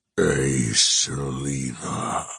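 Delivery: deep, gargled, throaty croaking creature voice. A narrator reads a golem's words as it speaks to the narrator: croaking creature voice. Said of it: "It croaks".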